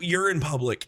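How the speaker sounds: ordinary talk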